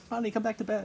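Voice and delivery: soft, high, ladylike feminine voice. Playing the voice on the other end of a phone call: feminine voice. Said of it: "I have a feminine voice".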